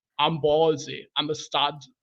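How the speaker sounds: put-on Austrian accent. Trying the ballsy stud quote when asked: Arnold Schwarzenegger impression. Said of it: "So if I try to mime him".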